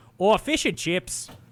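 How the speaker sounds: loud, put-on Upper Midwest Wisconsin accent. Imagining the other speaker talking to a British person: Wisconsin accent. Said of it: "slipping into a Wisconsin accent".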